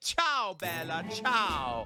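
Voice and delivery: fake Italian accent. Greeting a player who is playing as Italia, in a mock Italian accent. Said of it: "let's give our best hello in Italia".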